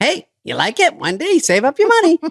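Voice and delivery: very high, sing-songy, off-the-mark manager voice. Retelling what their rich manager says at his house: impression of Gervitz. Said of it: "do an impression of him that doesn't sound like him".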